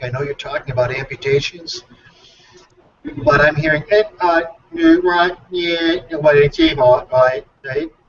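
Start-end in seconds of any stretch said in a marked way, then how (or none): 3.9-7.9 choppy, garbled, glitching droid-like mock voice. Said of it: "you sound sort of like R two D two on drugs".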